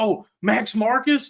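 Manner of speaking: mock screaming. Retelling what he screamed at someone: retelling own screaming. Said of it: "I actually was screaming at him".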